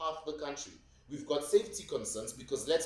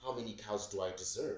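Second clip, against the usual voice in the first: utterly serious, low, deadpan tone; 4 semitones lower, 6 dB quieter than usual. Retelling what a woman asked him, imitating her dead-serious tone. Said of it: "she says in the most serious tone".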